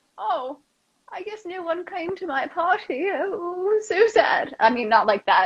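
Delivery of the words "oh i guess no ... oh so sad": put-on mournful old-woman voice, very slow, drawn out. Demonstrating a line for a downer role, sounding like an old woman. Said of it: "Don't sound like an old woman".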